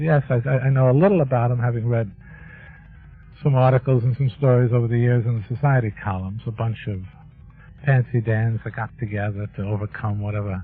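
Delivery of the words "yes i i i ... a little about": ordinary delivery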